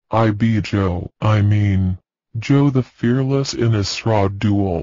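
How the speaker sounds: ordinary delivery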